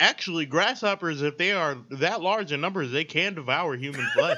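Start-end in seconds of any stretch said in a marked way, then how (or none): none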